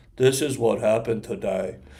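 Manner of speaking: flat, level, toneless monotone delivery. Explaining sensationalism, the speaker mimics how he refuses to sound: flat monotone. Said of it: "I'm not sitting here some monotone".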